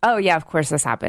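normal talking voice

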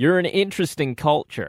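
put-on American accent. Quoting what they had to say, attempting an American accent. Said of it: "I'll see if I can do an American accent".

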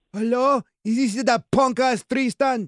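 put-on Italian accent. Prank-calling the man who disrespects the speaker's grandchild, in an Italian accent. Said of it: "I develop an Italian accent".

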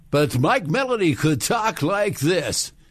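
put-on classic on-air announcer voice, old-time radio DJ. Retelling an old radio story, imitating an old radio DJ voice. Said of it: "I'm gonna try to do the voice".

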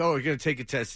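plain

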